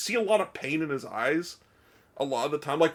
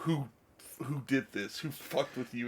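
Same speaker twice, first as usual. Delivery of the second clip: mock furious, angry, demanding, accusing tone; 2 semitones lower, 7 dB quieter than usual. Retelling a film scene where a character is pissed: imitating an angry man. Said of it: "he's pissed".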